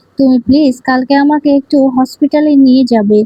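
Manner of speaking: normal talking voice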